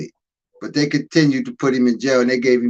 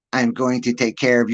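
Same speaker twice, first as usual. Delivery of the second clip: put-on chipmunk voice, mocking. Retelling a friend comforting someone crying, mocking his chipmunk voice. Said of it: "He had a stupid ass chipmunk voice".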